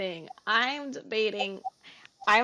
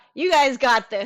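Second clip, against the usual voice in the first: very loud, energetic yelled shout; 3 semitones higher, 8 dB louder than usual. Voicing a character yelling encouragement across a fight: yelling out encouragement. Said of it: "Sakura's gonna yell out".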